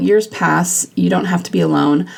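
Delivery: normal talking voice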